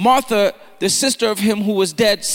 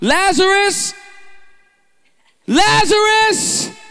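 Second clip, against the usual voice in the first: very high voice crying out loudly; 10 semitones higher than usual. Reading the Bible, the speaker gives Jesus crying out to Lazarus: loud cry. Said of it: "he cried with a loud voice".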